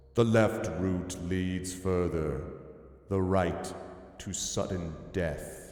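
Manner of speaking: low, cold, stony sphinx voice. Streamer reading game text where a sphinx speaks, in a stone-cold sphinx voice. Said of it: "the cryosphinx speaks in a stone-cold voice".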